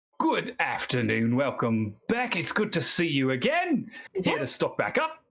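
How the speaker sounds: put-on laid-on broad Australian accent, sing-song. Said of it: "broad Australian".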